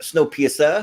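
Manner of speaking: rising inflection on the end of Snowpiercer. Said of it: "You gotta have the inflection at the end".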